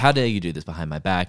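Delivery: mock angry, accusing outburst. Retelling a tv scene where the pm is angry at his servant: imitating an angry pm. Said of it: "he's angry at his manservant".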